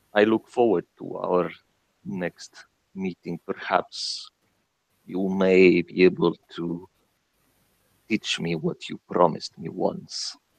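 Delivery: soft, low-key, ghostly disembodied whisper. Voicing a disembodied voice heard by a departing character: whispering voice. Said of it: "the voice whisper".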